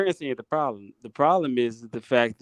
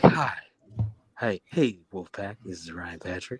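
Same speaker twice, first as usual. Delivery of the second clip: low, smooth quiet storm voice; 6 semitones lower, 3 dB quieter than usual. Showing how Ryan Patrick talks into the mic for his intro, Ryan Patrick's quiet storm voice. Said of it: "has like a quiet storm voice".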